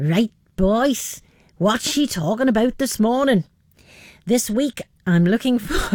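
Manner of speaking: accent from the Isle of Man. Speaker attempts a Manx accent for a bit: attempted Manx accent. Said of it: "I'll try to do my very best Manx accent".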